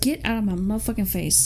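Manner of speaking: ordinary talk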